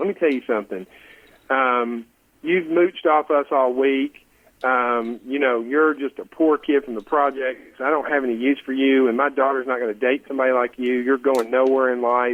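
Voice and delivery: plain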